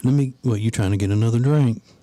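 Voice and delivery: put-on smooth, flirtatious nightclub-style voice. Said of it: "talking to her like she's in the club".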